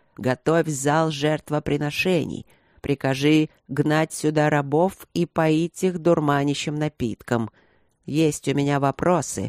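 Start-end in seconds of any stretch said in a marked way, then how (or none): none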